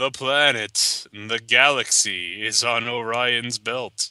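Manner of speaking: sinister, low, menacing space-alien voice. Quoting a line as a joke, mock-menacing. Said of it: "He says menacingly".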